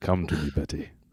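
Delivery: deepest possible baritone. Calling to a sheep named Betty, in the lowest baritone voice. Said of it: "speak in my lowest baritone possible".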